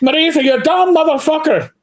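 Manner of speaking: angry Irish brogue. Retelling a phone call after a night of drinking, the speaker is retelling a yell in irish brogue. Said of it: "getting yelled at with an Irish brogue".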